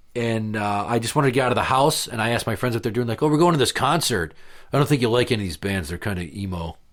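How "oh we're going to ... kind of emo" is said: ordinary talk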